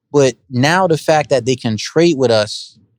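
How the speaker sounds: usual speaking voice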